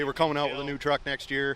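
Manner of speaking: ordinary delivery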